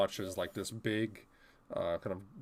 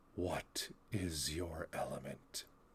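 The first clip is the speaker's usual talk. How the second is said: low, muttered murmur under the breath; 4 semitones lower, 9 dB quieter than usual. Narrating what the listeners hear as they approach, in an under the breath voice. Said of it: "a under the breath kind of voice that says".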